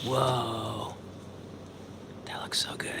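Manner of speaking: eerie, hushed creepy whisper with drawn-out "whoa". Reacting to a friend's towering burger: creepy whisper. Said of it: "I'm like whispering in a creepy way".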